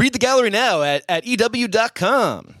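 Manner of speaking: put-on announcer voice. Mid-conversation, briefly slipping into an announcer voice. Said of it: "that was my announcer voice".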